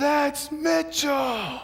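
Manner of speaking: shouting very high, slow and drawn out.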